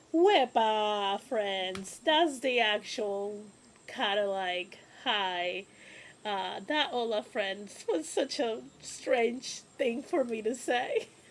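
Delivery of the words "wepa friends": loud put-on Puerto Rican accent, laid on heavy. Greeting friends after failed tries, the speaker switches to a Puerto Rican accent. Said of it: "Let's do very much a Puerto Rican one".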